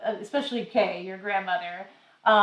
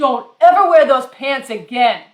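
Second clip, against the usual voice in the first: hollered at full blast, very loud; 4 semitones higher, 10 dB louder than usual. Retelling what the mail guy said at the counter: imitating someone yelling. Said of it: "And he's yelling at me".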